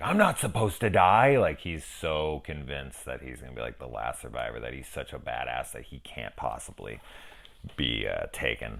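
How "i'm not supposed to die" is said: high, loud, panicked cry of disbelief. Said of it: "he's like".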